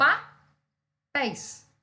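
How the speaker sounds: pá said loud, pause before pés, syllables separated.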